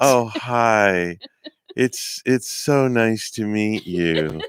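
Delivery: acted, entranced, smitten tone. Acting out a mother meeting her daughter's teacher: imitating an entranced mom. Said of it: "the mom goes to meet the teacher, and she's just like".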